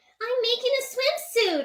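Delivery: very high-pitched cartoon character voice. Acting out a requested scene of Sweetie Belle making a swimsuit: Sweetie Belle voice. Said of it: "Sweetie Belle trying to make a swimsuit".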